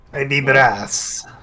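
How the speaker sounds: put-on Italian-like accent. Playing a newly changed brass Dragonborn: Italian-sounding character voice. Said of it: "Why does he talk like that now?".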